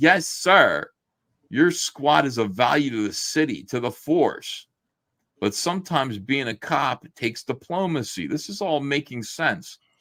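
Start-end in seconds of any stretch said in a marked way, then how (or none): 0.0-0.9 acted-out sarcastic, mocking tone. Retelling a scene where a scolded cop answers his superior, retelling a sarcastic 'yes, sir'. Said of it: "And he says sarcastically".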